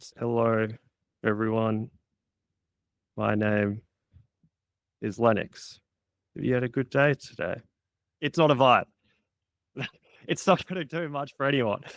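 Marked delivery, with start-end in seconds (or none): 0.2-7.6 unsure, timid, hesitant, unconfident voice. Example of a live speech opening that falls flat: unconfident speech delivery. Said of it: "when you're not speaking confidently ... I'm talking like this".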